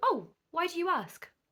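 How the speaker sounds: friendly, pleasant tone. Demonstrating a reply to someone asking if you are still single; really pleasant tone. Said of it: "Really pleasant tone of voice".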